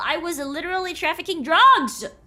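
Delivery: normal talking voice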